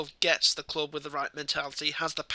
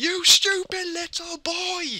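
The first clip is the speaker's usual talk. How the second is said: very high, loud, enraged screaming; 7 dB louder than usual. Recalling a player's dive against Arsenal: retelling a scream at the TV. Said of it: "I was screaming at the TV".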